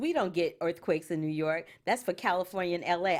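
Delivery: normal talking voice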